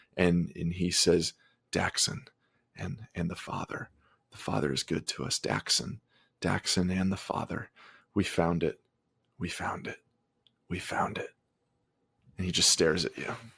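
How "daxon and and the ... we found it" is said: mumbling under breath, muttering, much quieter. Voicing a terrified man who stares at the players: muttering. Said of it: "he just kind of starts muttering".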